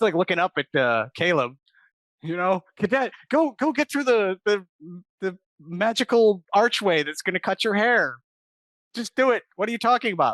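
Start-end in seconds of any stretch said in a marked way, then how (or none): 2.8-10.3 mock screaming at a higher pitch. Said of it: "she's just screaming impotently at these cadets".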